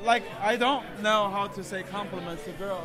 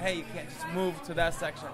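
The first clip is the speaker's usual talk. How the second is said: ordinary delivery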